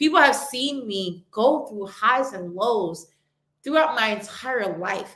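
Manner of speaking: moved, earnest, heartfelt emotional tone. Speaking about the highs and lows of her own life, getting emotional. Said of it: "I'm getting emotional".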